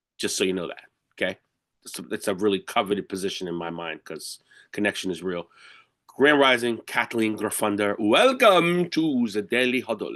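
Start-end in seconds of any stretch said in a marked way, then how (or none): 8.0-10.2 slow, drawn-out voice with faint vampire quality. Welcoming a guest to the Daily Huddle, sounding a little bit Dracula. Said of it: "That was a little bit uh, Dracula".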